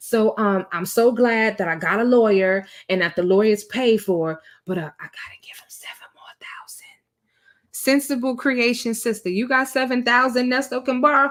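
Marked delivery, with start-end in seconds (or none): 0.0-6.9 mock quiet, sneaked-in aside. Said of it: "He be trying to squeeze it in there".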